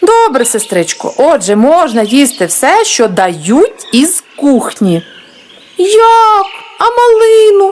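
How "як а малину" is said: very high, pleading, plaintive little squeak. A girl questions the rule the sergeant just gave, plaintive squeak. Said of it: "жалібно пискнула".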